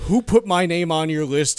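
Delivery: mock hostile, aggressive, confrontational tone. Retelling a friend calling debt collectors back: imitating a friend being aggressive. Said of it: "getting, like, really aggressive".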